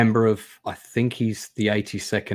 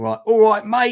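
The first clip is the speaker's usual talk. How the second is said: loud, raised, put-on Cockney accent; 12 semitones higher, 5 dB louder than usual. Describing the two types of british in a film, imitating a cockney accent. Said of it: "lots of cockneys".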